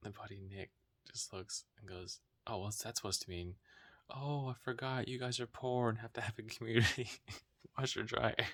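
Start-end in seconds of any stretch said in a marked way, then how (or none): 2.5-8.3 loud, sarcastic, mock-offended tone. Retelling a buddy's joke about a community washer dryer: imitating Nick's sarcastic jab. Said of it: "he said it very sarcastically".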